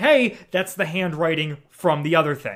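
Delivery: plain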